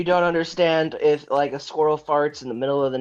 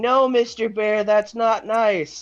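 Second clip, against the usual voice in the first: high, screamed, pleading, scolding voice; 8 semitones higher, 4 dB louder than usual. Retelling a YouTube video of a woman in the woods: imitating a woman screaming. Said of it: "she's screaming".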